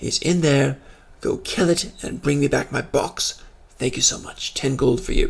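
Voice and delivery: soft, half-whispered voice. Voicing a character at a cave mouth, urging adventurers inside: half-whispering NPC. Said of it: "he's kinda whispering now".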